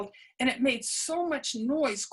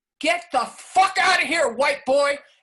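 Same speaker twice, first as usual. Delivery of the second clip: very loud, booming shout; 10 dB louder than usual. Retelling how an unseen voice shouted at a man walking up, booming voice. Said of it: "a voice boomed out".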